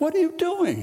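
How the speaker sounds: startled, alarmed voice.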